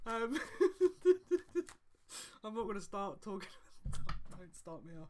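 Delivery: loud laughing giggle while talking.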